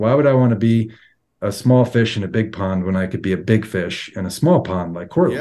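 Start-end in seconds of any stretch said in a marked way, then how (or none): none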